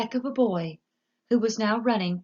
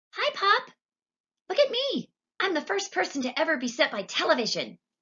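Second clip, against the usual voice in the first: tiny, very high, mouse-like squeak, swooping; 10 semitones higher than usual. Narrating a story: a tiny boy speaks from inside the TV, Mike Teavee's tiny squeaky voice. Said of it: "no louder than the squeaking of a mouse".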